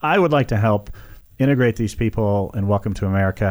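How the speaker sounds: ordinary talk, nothing marked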